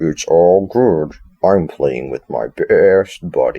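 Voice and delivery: dragged-out, slow character voice. Describing a game, the speaker repeats Freddy's message in a Freddy voice. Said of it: "Can I do that in a Freddy voice?".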